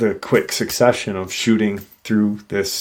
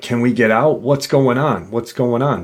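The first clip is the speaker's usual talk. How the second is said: imitated scared, urgent children's screaming; 2 semitones higher than usual. Retelling frightened kids in a car: imitating kids screaming. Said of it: "The kids are now screaming".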